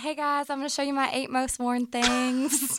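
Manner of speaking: put-on chatty American South accent. Imitating how they sounded in their own old videos, with a southern accent. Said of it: "you can hear a southern accent in my voice".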